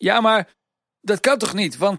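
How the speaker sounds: halting, stammered words. Narrator reads a story character's reply, stammering. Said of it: "stamelde de Hoofdpiet".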